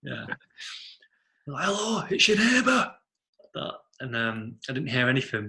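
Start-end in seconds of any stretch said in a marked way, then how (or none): 1.6-2.9 put-on loud, high-pitched Scottish accent. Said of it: "when it went Scottish".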